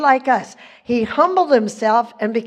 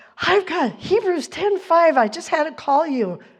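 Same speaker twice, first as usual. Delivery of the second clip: mock-excited woman voice, much higher; 4 semitones higher than usual. Retelling what a woman said when she called, imitating an excited woman. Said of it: "she was so excited about this".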